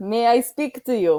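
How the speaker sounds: slow, awful, bad fake Russian accent. In a roleplay, a character asks to speak with someone: awful Russian accent. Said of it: "continue to hear my awful Russian accent".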